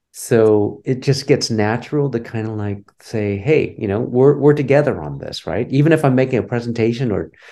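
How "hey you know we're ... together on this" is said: ordinary talk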